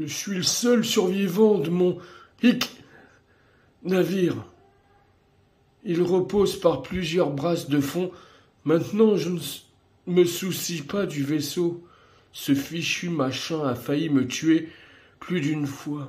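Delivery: put-on very high, loud, tipsy drunk man's voice. Voicing a character's lines, the speaker does a drunk guy voice. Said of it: "faire une petite voix d'un mec bourré".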